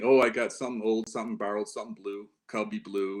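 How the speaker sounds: ordinary delivery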